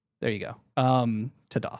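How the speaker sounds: ordinary delivery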